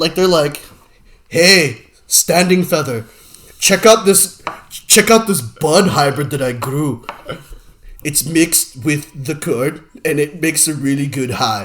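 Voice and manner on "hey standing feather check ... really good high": slow, inaccurate put-on Indian subcontinent accent. Imagining how Native Americans treated weed, in a put-on Indian accent. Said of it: "I think you're doing the wrong Indian accent".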